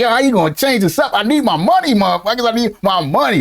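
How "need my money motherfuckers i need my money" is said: ordinary talk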